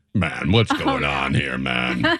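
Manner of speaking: low, slow, blokey regular-guy drawl. Acting out a tough guy's reaction to being held: Ernie's voice. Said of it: "Ernie's response to being held".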